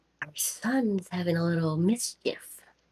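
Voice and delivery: hushed, half-whispered in-character voice. Playing a character who walks up to the captain: half-whispering in character. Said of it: "walk up to the captain and whisper".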